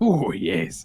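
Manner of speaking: high, loud, hammed-up mock pirate accent. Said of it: "you want a pirate accent".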